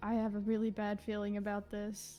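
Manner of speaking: muttered quietly under the breath. Player voicing Azalea after the others went inside, muttering under his breath. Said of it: "mutters under his breath".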